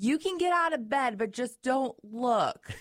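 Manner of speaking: loud high call. Speaker recounts how she called out from the kitchen; retelling a shout. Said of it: "she's like yelling from the kitchen".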